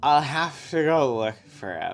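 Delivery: put-on tipsy, boozy, drunken voice. Narrating a scene, Joseph asks his wife about putting Krish to bed; Mary's drunk voice. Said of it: "I'm just gonna do her drunk voice".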